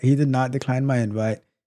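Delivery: normal talking voice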